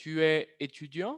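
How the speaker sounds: rising question tune at end of étudiant. Teacher demonstrating French question intonation: pitch rises at end on étudiant. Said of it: "vamos a subir la intonación. Escuchen bien".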